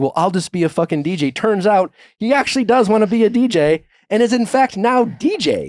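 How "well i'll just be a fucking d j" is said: sneering, sulky, condescending, petulant delivery. Retelling a husband's petulant retort to his wife: imitating someone being condescending.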